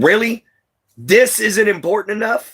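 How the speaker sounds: play-acted, pitched way up, furious angry outburst. Retelling setting a baby in front of a man: retelling own angry words. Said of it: "And I finally got mad".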